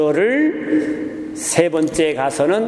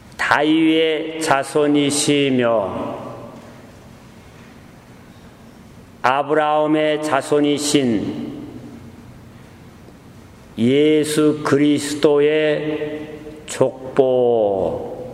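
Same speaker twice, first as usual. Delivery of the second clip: slow, deliberate, unhurried reading, word by word; 2 semitones lower than usual. Demonstrating how to read a bible passage aloud at this level: slow reading. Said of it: "시범을 한번 보이면 ... 이 정도의 수준으로 천천히".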